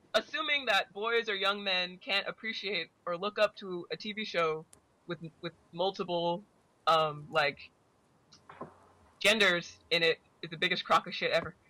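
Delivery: normal talking voice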